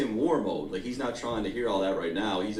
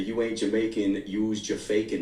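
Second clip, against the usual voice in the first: normal talking voice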